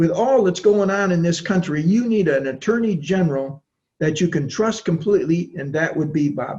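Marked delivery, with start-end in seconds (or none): none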